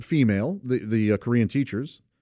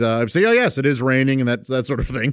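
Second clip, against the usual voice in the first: normal talking voice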